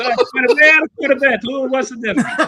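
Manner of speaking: put-on thick Italian accent. Retelling the car seller greeting a buyer: imitating thick Italian accent. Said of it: "this guy with a thick Italian accent".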